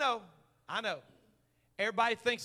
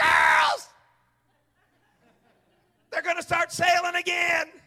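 very loud, high, all-excited shout; 8 semitones higher, 11 dB louder than usual. Retelling his wife reading a cruise email on the sofa: imitating his excited wife. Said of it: "She got all excited".

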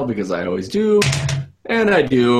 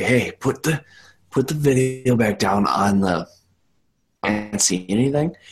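whispered in a character voice. Playing a character who whispers an instruction into another's ear: whispering in character. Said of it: "whisper in Aaron's ear".

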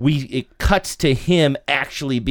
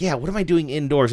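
ordinary delivery

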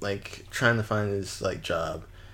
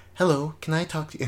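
put-on mock voice, much higher and faster; 8 semitones higher, 5 dB louder than usual.

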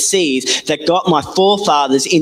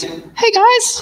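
very high, silly, harmless put-on giant voice. Imagining how the bronze-armoured giant might have called out: imitating a giant in a funny unthreatening voice. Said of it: "His voice wouldn't have been like that".

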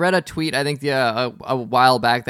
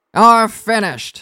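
put-on gritty cartoon voice, higher and louder; 8 semitones higher, 7 dB louder than usual. Showing how Fred Flintstone sounds: imitating Fred Flintstone. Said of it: "I'm just trying to mimic him".

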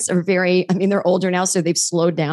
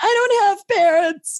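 very high, tearful bursting-into-tears cry; 14 semitones higher than usual. Retelling a first kindergarten day, imitating own past crying. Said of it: "I burst into tears and went".

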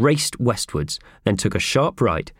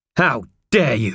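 steely voice with a hard edge; 3 semitones higher than usual. Mr. Bulletin confronts Howard after the woman's bag is burst; steely voice. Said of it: "in a steely voice".

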